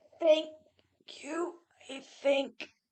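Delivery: very hoarse croak. Voicing a creature recovering some of its voice after coughing: very hoarse voice. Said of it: "in a very hoarse voice".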